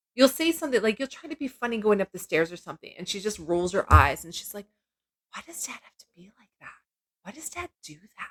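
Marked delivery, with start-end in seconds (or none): 5.4-8.3 very quiet, very soft whisper. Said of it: "'cause she whispers".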